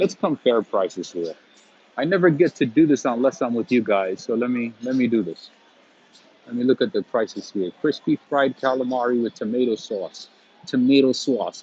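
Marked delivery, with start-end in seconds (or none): 10.7-11.6 New York accented speech. Reading a restaurant menu aloud, the speaker slips into a new york accent. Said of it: "I sound like a New Yorker".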